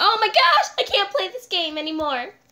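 loud, frightened, agitated, panicked outburst. Reacting to a scary moment while playing a game together: panicked. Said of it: "You need to calm down".

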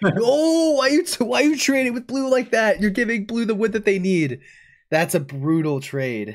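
very high, flustered, frantic freaking out. Watching another player trade wood to blue during the game, freaking out. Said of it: "I'm like freaking out over here".

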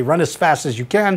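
normal talking voice

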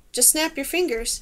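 ordinary delivery, nothing marked

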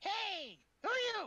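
tiny squeaky voice, very high and loud. Someone stepping out suddenly hears a voice call to them, squeaky little voice. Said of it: "you hear kind of a squeaky little voice".

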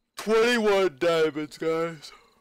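very loud words through a yawn. Listing the loot gathered so far, yawning while talking. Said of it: "Sorry for yawning".

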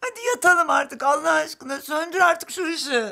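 tearful voice. Calling to him after he has stepped outside: crying. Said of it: "E hadi artık ağlama".

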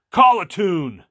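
very loud, very high, gruff holler. Retelling a bandmate calling across the stage, in Rob's loud, gruff voice. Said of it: "in his loud, gruff voice says".

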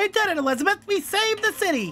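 very high, loud cartoon-character voice. Repeating another speaker's quoted line as a cartoon character: SpongeBob voice. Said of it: "that's the best SpongeBob I can do with this voice right now".

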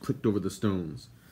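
ordinary delivery, nothing marked

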